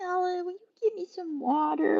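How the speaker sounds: put-on helpless, soft, high tiny-child voice. Describing a woman's helpless act, imitate her little kid's voice. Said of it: "she's that little kid's voice".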